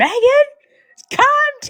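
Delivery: put-on, very high-pitched yelling through laughter. Retelling how you yelled at Megan while laughing the whole time: retelling a laughing yell. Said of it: "I was laughing the whole time".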